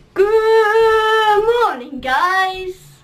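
high, loud voice with long drawn-out "good". Doing YouTube impressions for viewers: Alfie Deyes impression. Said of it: "I think that was goodish".

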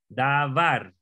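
davar with stress on second syllable var. Pronunciation lesson in Spanish on where a word's stress falls: stress on second syllable of davar. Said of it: "el énfasis está en, en esta segunda parte".

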